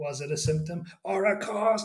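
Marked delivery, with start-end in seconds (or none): 1.0-1.9 mocking, sneering put-on voice, open mockery. Retelling how this guy repeated a question from the interview: mocking Dalek voice. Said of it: "it goes into that Dalek voice".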